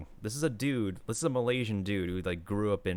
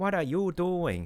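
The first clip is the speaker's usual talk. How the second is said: high Singapore-style English accent; 9 semitones higher than usual. Speaker imitating how people in Singapore speak English, Singaporean English accent. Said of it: "who speak like this in this accent".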